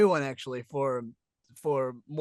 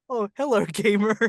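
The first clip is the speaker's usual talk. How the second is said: high, loud cartoon monkey voice; 7 semitones higher, 7 dB louder than usual. Recalling a teenage audition for the monkey role; Boots voice. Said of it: "you just had to say it in the Boots voice".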